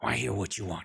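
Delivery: rough, very gruff voice. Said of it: "very uh, gruff voice".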